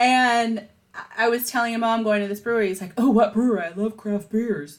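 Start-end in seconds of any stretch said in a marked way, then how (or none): 3.0-4.8 put-on children's-show puppet-like character voice. Speaker reads a friend's text in her text voice for him: Sesame Street character voice. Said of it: "he kind of sounds like a Sesame Street character".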